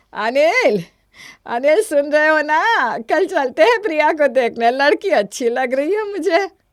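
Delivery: loud, high-pitched shouting. A mother calls out to her son Anil, who says he isn't deaf, shouting. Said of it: "इतना चिल्ला चिल्ला कर बोल रही हूँ".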